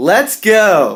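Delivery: high, energetic, eager, enthusiastic voice. Restarting the electron transport chain lesson opener, enthusiastic. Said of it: "we need a little more enthusiasm than that".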